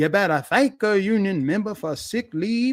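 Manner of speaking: fake Southern accent. Mocking a politician's speech, quoting her line: imitating a fake Southern accent. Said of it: "she trotted out that fake Southern accent".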